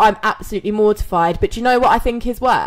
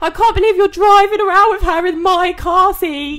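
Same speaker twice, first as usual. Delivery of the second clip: put-on tearful crying voice, higher; 9 semitones higher, 3 dB louder than usual. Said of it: "Ringing him up, like, crying".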